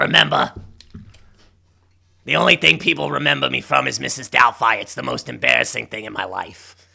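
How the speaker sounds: put-on raspy celebrity voice. Doing an impression for a friend: Harvey Fierstein voice. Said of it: "My throat hurts so bad from doing that".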